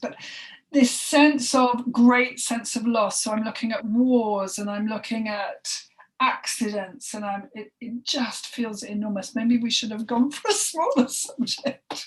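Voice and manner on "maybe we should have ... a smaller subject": light laugh through the words. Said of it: "I'm sorry to laugh".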